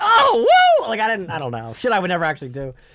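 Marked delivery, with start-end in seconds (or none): 0.0-0.9 high, loud fake excited whoop. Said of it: "I'm like".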